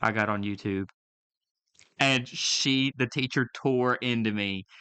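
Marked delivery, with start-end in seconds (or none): 0.0-0.9 put-on completely straight, dead-serious deadpan delivery. Retelling answering a teacher, imitating own deadpan serious tone. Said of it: "with the straightest face and the most serious tone".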